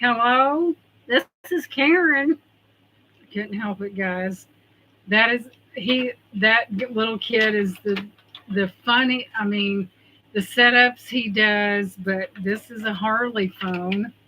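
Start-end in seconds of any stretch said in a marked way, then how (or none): 0.0-2.4 high, squawky parrot-like bird voice. Retelling a movie scene where a bird answers the phone: imitating a bird answering the phone. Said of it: "the bird answers and he sounds like this".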